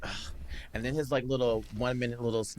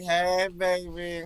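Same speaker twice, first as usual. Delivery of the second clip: high, flirty auntie voice, laying on charm; 6 semitones higher than usual. Saying how they would have greeted the good-looking man, in a flirty auntie voice. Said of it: "like a real auntie".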